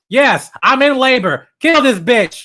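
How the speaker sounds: mock, very high, very loud aggressive yell. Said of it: "the most aggressive Sue Storm".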